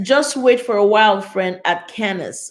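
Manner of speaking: normal talking voice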